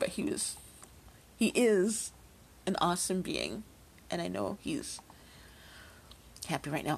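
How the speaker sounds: halting, tearful delivery, crying, voice breaking. Live on air, speaking about someone admired, still crying. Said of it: "I'm just going to keep on crying".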